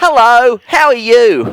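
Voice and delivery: put-on children's TV channel announcer voice. Showing the others the voice used for ABC Kids: ABC Kids announcer voice. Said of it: "You're the voice of A B C Kids".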